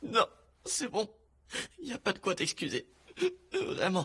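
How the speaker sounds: tearful, weeping, crying through the words. Telling the other speaker there is no need to apologise: crying while talking. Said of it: "Tu peux arrêter de pleurer maintenant".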